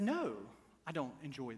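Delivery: put-on gentle, soft British accent. Retelling what a rose bush said while being pruned, in a gentle British accent. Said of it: "in a very gentle British accent".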